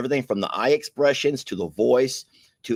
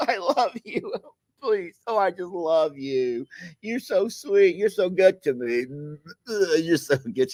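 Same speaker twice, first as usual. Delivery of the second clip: high, weepy, blubbering, sentimental put-on drunk voice; 8 semitones higher than usual. Describing types of drunks, acting out the crier drunk: imitating a crying drunk. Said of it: "you have your crying drunks".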